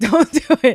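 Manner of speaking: put-on frantic, all-out begging, high and loud. Retelling being made to watch a scary bathroom ritual: imitating desperate begging. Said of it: "trying to beg with all of my life".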